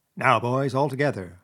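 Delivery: ordinary delivery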